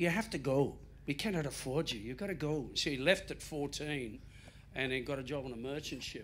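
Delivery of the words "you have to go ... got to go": pirate-ish Irish brogue drifting into Scottish. Retelling how James was told he had to go, in a Tom Cruise Far and Away Irish accent. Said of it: "it came out Scottish".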